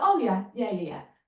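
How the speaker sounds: subtle, knowing, dismissive intonation. Showing how he answers new information, with a mock knowing already-knew tone. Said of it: "it's just that subtle intonation that suggests I already knew what they just told me".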